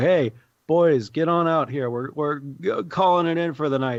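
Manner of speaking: put-on drunk shouting. Narrating a scene, drunk men outside a warehouse call to their friends, drunken yelling. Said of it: "they start yelling like".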